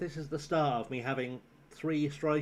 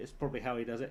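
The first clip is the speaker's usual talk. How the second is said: plain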